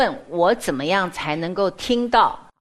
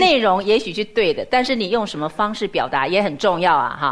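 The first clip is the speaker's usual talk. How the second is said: ordinary talk, nothing marked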